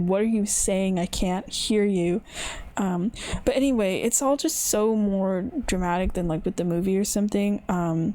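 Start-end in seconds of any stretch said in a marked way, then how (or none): none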